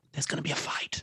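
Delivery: hushed whisper, very close. Voicing a character warning a player in their ear: whispering in someone's ear. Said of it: "he whispers in your ear, he goes".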